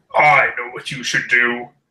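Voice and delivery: echoing, disembodied voice filling every corner of the room. Narrating a scene, a voice heard throughout the room, booming and echoing. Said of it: "A booming voice that seems to uh, echo from every corner of the room says".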